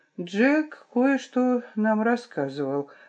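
softly spoken. Asked by the narrator whether she knew, she answers quietly. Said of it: "ответила она тихо".

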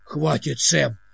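irritated, annoyed, exasperated. Dimok tells Sam to stop after Sam's remark, irritated. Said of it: "сказал Димок с раздражением".

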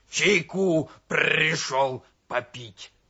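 croaking, rasping, hoarse wheeze. Narrator reads the donkey's reply to the frightened bear cub, hoarse wheeze. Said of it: "прохрипел ослик".

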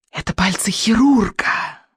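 hissing witch voice, words hissed through teeth. A narrator reading the witch's line in a story, hissing. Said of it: "прошипела ведьма".

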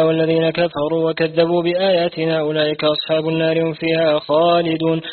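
ordinary delivery

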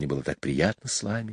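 soft, quiet, low voice. A woman breaks the silence while saying goodbye to the children, quietly. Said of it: "тихо сказала Майя".

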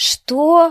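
very loud, high cry in an altered voice. A child, told his father will come back, exclaims in an altered voice. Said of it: "воскликнул Мартын не своим голосом".

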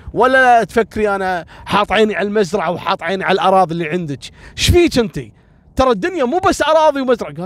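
worked-up, defensive outburst with rising pitch. Retelling what a man told a woman who misunderstood him, retelling an agitated outburst. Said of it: "قالت له زين اهدى اهدى خلاص اوكي".

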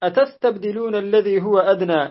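normal talking voice

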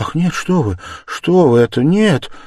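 with fright. Sonya answering him about Katerina Ivanovna, frightened. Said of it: "С каким-то даже испугом посмотрела на него Соня".

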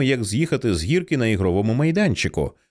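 plain

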